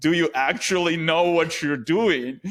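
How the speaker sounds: high-pitched, play-acted frustrated screaming. Retelling how a guy screamed at the speaker during a kite outing, imitating someone screaming. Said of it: "starts screaming at me in".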